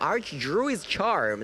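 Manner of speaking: slow, deliberate, careful pronunciation. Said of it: "that's how it's called".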